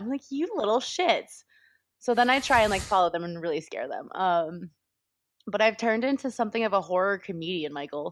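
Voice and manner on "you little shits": mock stern, strict scolding tone. Comedian retelling telling off kids who swore at her, mock-scolding. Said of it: "I get really scoldy when they do that".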